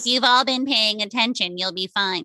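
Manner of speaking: put-on naive, young voice with easy reassurance. Recalling how they once spoke to their classroom, imitating their younger self. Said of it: "I'm saying that voice because that's literally young me talking".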